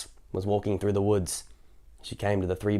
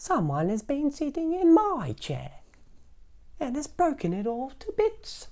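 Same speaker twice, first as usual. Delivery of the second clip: very high, swooping, squeaky, tiny sing-song voice. Narrator reading Baby Bear's line in the fairy tale, Baby Bear's wee little voice. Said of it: "cried the Baby Bear in his wee little voice".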